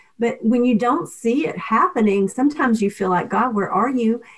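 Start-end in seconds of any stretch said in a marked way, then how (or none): none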